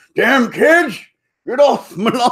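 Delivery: put-on high, loud, cranky old-man rant. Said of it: "I'm becoming an old man".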